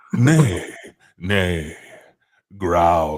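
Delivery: put-on seductive continental voice. Describing how he says his line, the speaker puts on a mock-seductive continental voice. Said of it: "in this voice ... sounds like a sort of continental um, sort of seduction".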